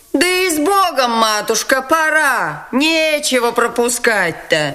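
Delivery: high shaken shout, пора drawn out. A woman reacts to news of a marriage to the prince, shouting, deeply shaken. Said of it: "крикнула Дарья Алексеевна, глубоко потрясенная".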